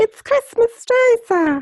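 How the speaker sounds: very high, poor little urchin voice, badly done accent. Playing a boy answering a man who asks what day it is, in a bad urchin accent. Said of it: "a bad different little adi- like urchin accent".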